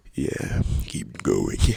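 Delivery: exaggerated, really low voice. Speaker satirizing feral voices from TikTok talk shows: exaggerated really low voice. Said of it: "when I go up to the mic and I talk like that".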